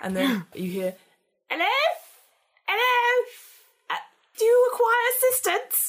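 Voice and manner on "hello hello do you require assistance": put-on very high elderly woman voice, calling out. Voicing an old lady calling out to someone squeezing through the aisles, old lady voice. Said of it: "this old lady sort of teeters".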